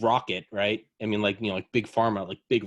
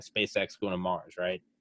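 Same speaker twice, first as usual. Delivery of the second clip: normal talking voice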